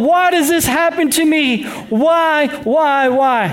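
play-acted, high, very slow, drawn-out yelling. Retelling gagging at a smell, the speaker acts out yelling. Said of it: "And I'm yelling".

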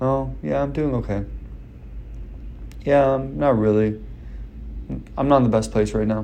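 depressed-sounding voice.

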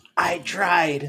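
faint last-breath whisper. Passing out, a character whispers to a fallen friend, a dying whisper. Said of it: "I whisper to him with a couple of last breaths".

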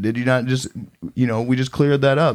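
ordinary talk, nothing marked

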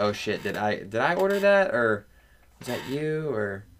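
halting, slow, confused, unsure fumbling speech. Retelling how diners react when food arrives: imitating a hesitant, unsure diner. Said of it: "like, they have to think".

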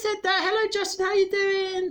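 very high, squeaky woman's voice. Telling a story, imitating a woman at the back: high-pitched woman's voice. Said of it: "She had a really high-pitched voice. Like that".

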